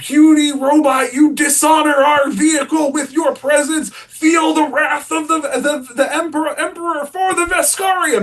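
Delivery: very high, full-throated, top-of-the-lungs shout. Retelling shouting at a little thing running out of the car: retelling a shout. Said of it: "I shout at the top of my voice".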